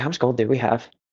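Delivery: hushed voice. Asking companions in character how much gold they have: whispering. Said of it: "trying to whisper".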